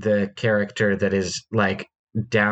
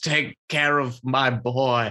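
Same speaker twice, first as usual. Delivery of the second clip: cartoon, storybook-character style Scottish accent; 4 semitones higher than usual. Retelling a character's parting words in a Scrooge McDuck accent. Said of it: "in a great scrooge mcduck accent".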